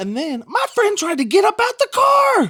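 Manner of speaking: high, loud, panicked exclamation.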